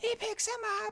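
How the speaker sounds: very high, thrilled, excited commentator shriek. Retelling a pickup for a jackhammer: imitating Tony Schiavone's high-pitched excited scream. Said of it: "Tony Schiavone screaming, like, in that high-pitched voice when he gets excited".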